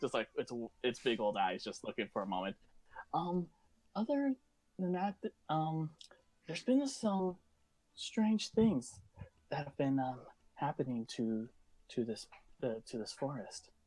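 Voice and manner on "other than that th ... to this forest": soft, almost meek creature voice. Voicing a creature answering in the mind: soft, almost meek creature voice. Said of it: "the soft, almost meek voice".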